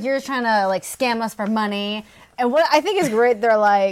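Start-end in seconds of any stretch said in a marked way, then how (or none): none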